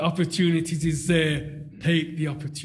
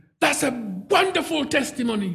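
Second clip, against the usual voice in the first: sudden, loud, booming outburst, pitched up; 8 semitones higher than usual. Retelling what a shop assistant said to his wife, retelling a loud outburst. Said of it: "broke out in a loud voice".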